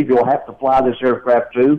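ordinary delivery

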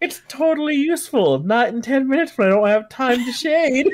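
high, mocking singsong.

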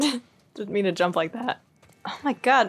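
cracking, breaking voice. A speaker reacts after jumping during a group bit, voice cracking. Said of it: "My voice is cracking like crazy today".

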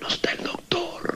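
sickly man's faint, slow, breathless whisper.

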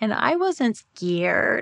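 put-on creepy little-girl voice, spoken very slowly. Retelling what she said on a hypnosis tape: imitating own little girl's voice. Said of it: "my voice literally changed to a little girl's voice".

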